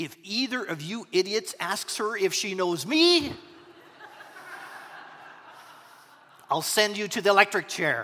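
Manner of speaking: ordinary delivery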